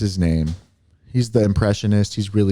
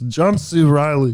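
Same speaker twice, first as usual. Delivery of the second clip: slightly higher voice with swallowed-sounding words; 6 semitones higher than usual. Showing how the voice is done by swallowing: John C. Reilly impression. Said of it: "you kinda swallow you this like this".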